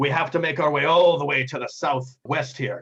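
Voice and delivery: pirate captain voice. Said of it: "the captain says".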